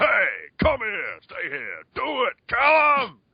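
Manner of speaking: very slow, loud, swooping, called-out delivery. Retelling quoting character voice commands from Abe's Exodus: imitating Abe's Exodus voice commands. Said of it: "I'd just be walking along down the street just going".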